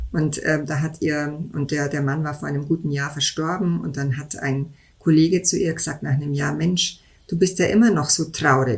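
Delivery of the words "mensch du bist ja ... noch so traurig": ordinary talk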